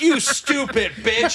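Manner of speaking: mock yelling, high-pitched and abusive in tone. Retelling a video of a man at a stuck delivery robot: imitating someone yelling. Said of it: "They'll just yell at them".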